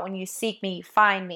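ordinary talk

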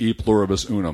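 plain

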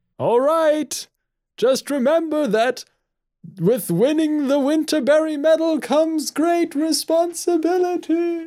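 very high voice drifting off into the distance. Calling after a woman walking away quickly, with a distancing voice effect. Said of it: "I did the distancing voice effect".

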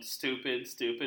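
plain

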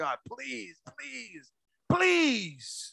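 put-on very quiet, slow, drawn-out begging voice. A speaker tells listeners how he sometimes begs god, acting out begging. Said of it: "I'll be begging like".

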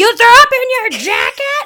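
shrill shriek, very high and very loud. Retelling their mom's reaction at dinner in Bertucci's: imitating mom screaming. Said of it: "you're fucking screaming right now".

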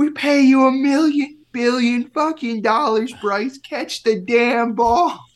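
put-on very high drunken scream at the top of the lungs. Retelling a woman screaming at bryce after he drops a pop fly, imitating a drunk woman screaming. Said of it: "she's screaming at the top of her lungs, like obviously hammered".

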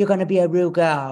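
loud, fake British accent. Retelling the call for Drag Race, imitating a British accent. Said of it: "he had a British accent".

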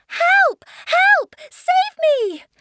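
very high, long-held, drawn-out screaming cries. Current Bunny, out of her depth in the water, screams for help. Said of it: "there was a scream".

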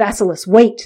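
plain

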